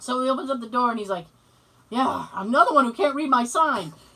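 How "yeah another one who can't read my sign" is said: cranky man's loud, angry yell. Retelling a TV scene where a man opens the door to kids: imitating a man yelling. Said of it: "So he's yelling at the kids".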